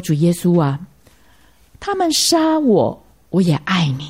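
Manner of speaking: usual speaking voice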